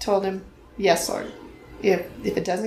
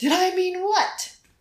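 put-on very high, shouted yell; 10 semitones higher than usual. Retelling a nighttime exchange with the Lord, the speaker is retelling a yell. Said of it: "And I yelled back".

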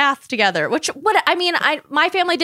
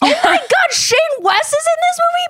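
mock very high burst of starstruck excitement; 4 dB louder than usual. Retelling first thinking an actor was in the movie: imitating own past excited exclamation. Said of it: "I was like".

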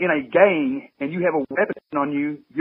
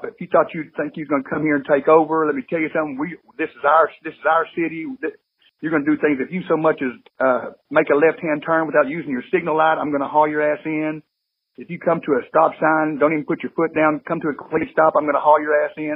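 normal talking voice

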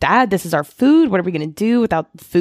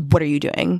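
rude, curt delivery; 3 semitones lower, 4 dB quieter than usual. Retelling a husband's reply to his wife in a show: imitating a rude reply. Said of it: "he very rudely responds".

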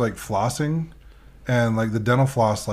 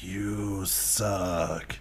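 faint, wispy, very quiet ghost voice; 4 semitones lower, 9 dB quieter than usual. Recounting a ghost recording caught at a house, really wispy voice. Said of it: "really wispy voice go".

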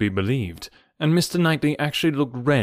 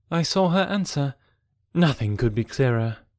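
plain reading voice

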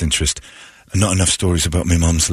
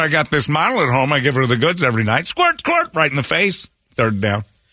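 put-on football announcer cadence, higher; 9 semitones higher than usual. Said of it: "the Madden cadence coming out of Tom Brady".

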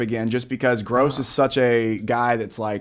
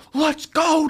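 put-on yell, higher. Retelling cheering from the filming station at a rivalry game: retelling own yelling. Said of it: "I'm yelling".

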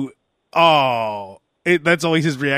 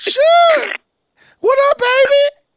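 put-on very high-pitched, loud voice; 6 dB louder than usual. Repeating the greeting line from the story: high-pitched voice. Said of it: "And I did that high-pitched voice".

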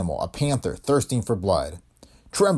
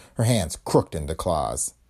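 ordinary delivery

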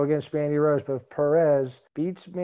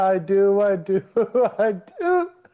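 very slow, high, giggling through each word; 5 semitones higher, 5 dB louder than usual. Answering another speaker's question, giggling while talking. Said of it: "Sorry, I got the giggles".

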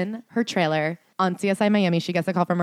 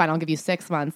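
ordinary delivery

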